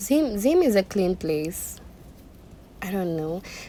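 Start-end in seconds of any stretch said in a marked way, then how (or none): none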